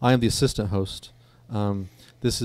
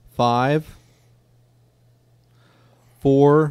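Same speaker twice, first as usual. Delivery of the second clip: mock off-rhythm delivery, higher and louder; 4 semitones higher, 7 dB louder than usual. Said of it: "he goes like this".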